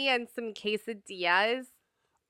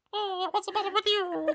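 put-on little Italian mouse voice, higher; 9 semitones higher, 3 dB quieter than usual. Describing a mouse puppet from a childhood tape: Topo Gigio voice. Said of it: "this little Italian mouse".

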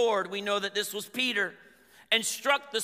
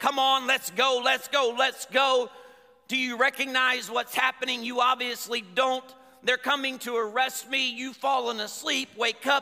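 put-on voice, slightly raised and hurrying; 3 semitones higher than usual. Acting out Jesus waking his sleeping disciples: imitating a raised voice. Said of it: "He raised his voice a little bit".

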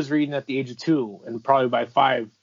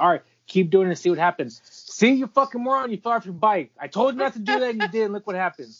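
mock raised, yelling voice, higher; 9 semitones higher than usual. Retelling a father scolding a child who fell off a bike: imitating dad's raised voice. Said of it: "as I raised my voice is basically my dad".

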